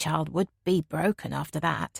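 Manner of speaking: ordinary delivery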